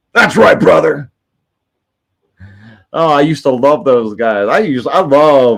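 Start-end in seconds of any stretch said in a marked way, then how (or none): 0.2-1.2 rough, creaky, roughened wrestler-style voice. Repeating the impression for the chat: Hulk Hogan voice. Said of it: "You like my Hulk Hogan impression?".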